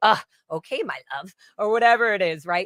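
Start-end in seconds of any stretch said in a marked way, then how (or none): 0.0-1.3 fed-up, irritated, aggressive tone. Showing how the phrase sounds when angry: mock angry. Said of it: "or if you're angry".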